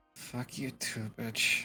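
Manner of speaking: muttering under breath. Voicing a character cursing at someone who walks out: muttered under her breath. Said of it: "Just under her breath".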